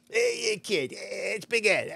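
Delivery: put-on New York accent. Retelling a call from the manager the next day, Big Ed Anderson's New York accent. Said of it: "full New Yorker".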